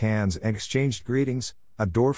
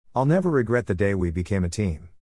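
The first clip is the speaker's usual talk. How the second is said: ordinary delivery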